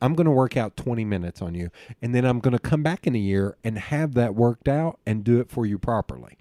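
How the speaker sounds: normal talking voice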